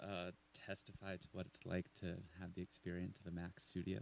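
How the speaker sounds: speaking very softly, flatly.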